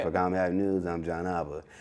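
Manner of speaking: dead-level, flat, serious deadpan monotone. Showing how he signs off his news segment: flat serious monotone. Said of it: "sounding real like monotone".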